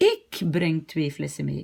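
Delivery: ik given strong, hard stress. Teaching a Dutch sentence in French, with stress on ik. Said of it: "on va juste mettre l'accent sur ik".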